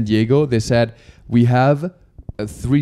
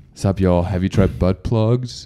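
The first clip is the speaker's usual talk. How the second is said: put-on American voice, lower; 5 semitones lower than usual. Trying to sound more American by imitating Jeff. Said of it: "Jeff acts like, um, what's Jeff go?".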